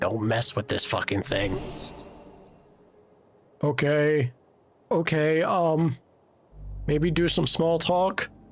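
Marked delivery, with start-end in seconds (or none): 0.0-1.6 hushed, whispering goblin voice. Voicing a goblin who warns the cleric quietly: whispering goblin. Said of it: "Snell whispers to you".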